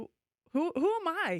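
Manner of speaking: high, loud, incredulous tone. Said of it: "I'm like".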